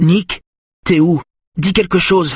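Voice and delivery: shrill, very high, worried, anxious voice. A girl on her phone calls out to someone, high anxious voice. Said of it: "une voix aiguë et anxieuse".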